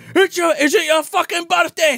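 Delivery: imitated screaming. Retelling a drunk actor's line from a film scene, retelling his screaming. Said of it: "He's just screaming".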